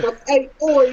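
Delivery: put-on Cockney accent. Showing which british accent will not be tried: put-on cockney accent.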